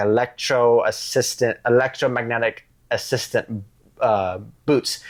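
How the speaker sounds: normal talking voice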